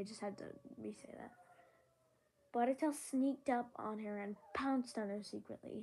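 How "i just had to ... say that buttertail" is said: usual speaking voice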